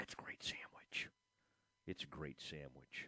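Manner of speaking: quiet theatrical whisper.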